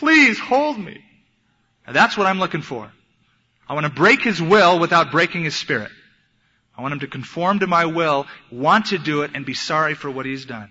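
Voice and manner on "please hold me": weepy sob, pitched very high. Retelling how he reacted after the spank, imitating someone sobbing. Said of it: "he's sobbing like".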